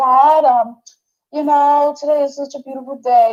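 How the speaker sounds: put-on, imitated little child's voice. Describing how she sounds sitting on the stairs with her coffee, imitating a little child's voice. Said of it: "she sounds like a little child".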